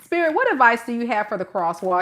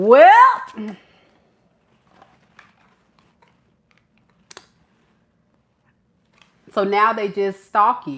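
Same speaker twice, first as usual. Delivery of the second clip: louder, long stretched, barely held-back laughter; 6 dB louder than usual. Speaking to the audience, the speaker is holding back laughter. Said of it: "I'm trying not to laugh".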